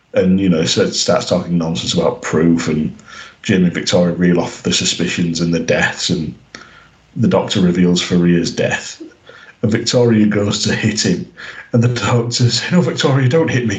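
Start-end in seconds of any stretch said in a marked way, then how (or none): 12.7-13.8 lovable-rogue voice, pitched up higher. Recapping a scene, quoting the Doctor to Victoria in the Doctor's own voice. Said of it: "In his actual voice".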